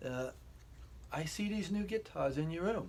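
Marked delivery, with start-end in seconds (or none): 1.1-2.9 attempted English accent, pitched up. Acting out a conversation with the woman who calls him darling, in an attempted English accent. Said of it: "I'll try to use like an English accent".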